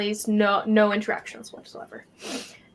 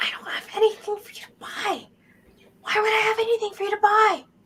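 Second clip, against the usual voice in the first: high, unvoiced yell-whisper. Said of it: "yell whispering at you".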